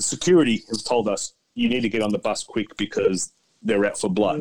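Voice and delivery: ordinary talk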